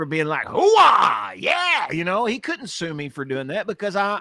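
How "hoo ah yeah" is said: very high-pitched, loud, belted-out shout. Giving an example of impersonating Al Pacino: Al Pacino impression. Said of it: "if I did a perfect impersonation of Al Pacino".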